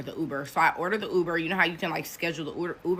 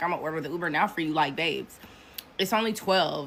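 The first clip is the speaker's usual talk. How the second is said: plain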